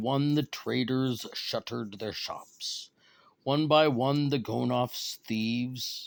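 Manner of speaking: ordinary delivery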